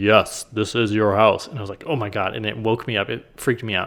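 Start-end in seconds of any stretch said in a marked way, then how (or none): 0.0-1.5 play-acted thundering, resounding, big booming voice. Retelling the answer heard after asking a question in the mind: booming voice. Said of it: "this booming voice that was like".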